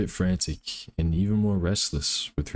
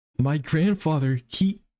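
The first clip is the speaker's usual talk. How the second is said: put-on girl voice with pitch raised up; 9 semitones higher, 3 dB louder than usual. Told to start doing a girl voice, speaker voices Nina with Nina's girl voice. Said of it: "You better start doing a girl voice".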